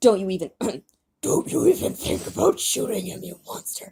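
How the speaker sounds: rumbling, low growl from deep down. Reading their own story aloud, the author voices Lucy's line in a low, growling voice. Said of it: "in a low, growling voice".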